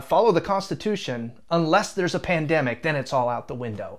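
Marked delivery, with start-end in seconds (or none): none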